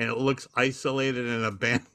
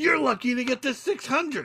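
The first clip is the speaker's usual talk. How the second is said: put-on angry screaming, higher pitched; 13 semitones higher than usual. Retelling a story where one person screams at another: imitating Mullins screaming. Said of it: "He just starts screaming at him".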